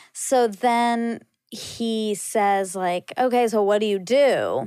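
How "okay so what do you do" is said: needling, shaming put-on male voice. Retelling a conversation, repeating a guy's questions: imitating the guy's voice. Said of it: "the way you're doing his voice".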